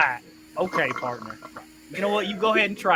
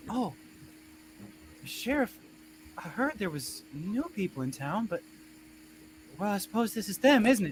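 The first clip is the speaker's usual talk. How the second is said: tiny, small, hushed, breathy, whispery voice; 4 semitones higher, 7 dB quieter than usual. Voicing a woman who speaks up behind the players: small voice. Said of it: "a small, uh, voice behind you".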